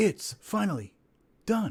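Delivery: deep, dramatic reading voice. Giving a dramatic reading of a short forum post: deep dramatic voice. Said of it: "We can do a deep dramatic voice".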